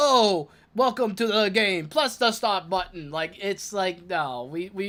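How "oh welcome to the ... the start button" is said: loud, synthetic text-to-speech narrator voice. Describing the game's accessibility narrator at startup: Microsoft Sam voice. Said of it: "you're gonna hear Microsoft Sam go".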